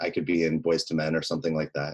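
plain

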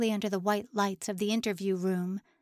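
ordinary delivery

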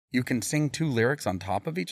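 plain

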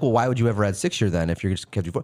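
ordinary talk, nothing marked

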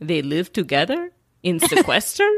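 put-on man speaking with a Russian accent. Retelling their dad's question about The Bachelor: imitating dad's Russian accent. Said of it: "my dad in his Russian accent goes".

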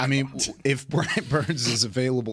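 words broken up by laughter throughout. Previewing a football matchup, unable to stop laughing, laughing while talking. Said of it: "I can't stop laughing".

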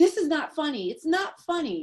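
put-on thick Italian accent. Retelling what a woman said beside a car: heavy Italian accent. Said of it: "she had a heavy, like, Italian accent".

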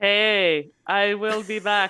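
booming put-on voice, each word slow and separate. Joining a joke bit after being asked to get involved: Schwarzenegger voice. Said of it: "that's a fun voice to do for everybody".

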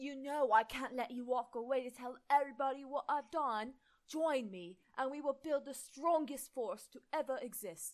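loud, badly done fake British accent. Reading a Harry Potter comment story aloud, voicing Tom in a bad fake British accent. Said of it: "I'm doing a really bad fake British accent".

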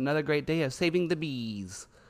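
otherworldly alien voice. Describing a woman who rescues bees, in a weird alien voice. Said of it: "now she talks like an alien".

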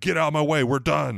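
loud, high-pitched yelling.

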